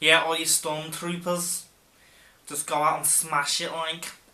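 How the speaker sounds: put-on Scouse accent. Imitating the manager from the show: scouse accent. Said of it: "a Scouser be like".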